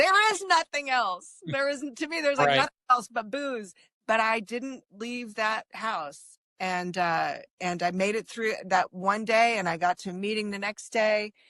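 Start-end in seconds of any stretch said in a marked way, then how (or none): 0.0-3.7 high-pitched scream, held back and contained. Retelling a phone call with a best friend: retelling screaming at him. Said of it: "And I screamed at him".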